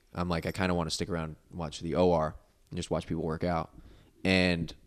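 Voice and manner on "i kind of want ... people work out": ordinary delivery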